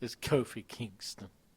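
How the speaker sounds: breathy, near-whispered put-on voice. Arguing a wrestling pick with another speaker: Stephen A. Smith voice. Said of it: "right on cue of Stephen A. Smith".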